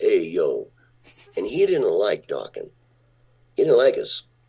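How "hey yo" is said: gnarly, put-on New York tough-guy accent. Retelling how big New York guys talked: imitating New York tough guy. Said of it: "with the New York act".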